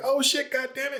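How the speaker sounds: play-acted shrill, full-throated, high, top-of-the-lungs scream. Telling a story about a man at a tree stump, retelling his scream. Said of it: "he like screams at the top of his lungs".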